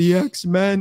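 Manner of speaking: play-acted, high, words pushed out through tears. Retelling answering mom's question while crying: imitating talking through tears. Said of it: "trying to talk to, through my tears".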